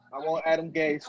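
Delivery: ordinary delivery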